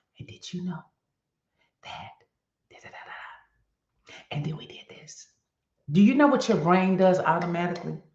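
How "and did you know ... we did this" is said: soft, unvoiced whisper. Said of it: "And then I started to do this".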